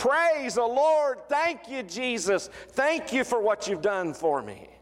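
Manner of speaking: jubilant, joyful, high shouting. Retelling how the healed Samaritan turns back to Jesus: imitating a shout of praise. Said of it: "he turns back and he looks at Jesus and he shouts".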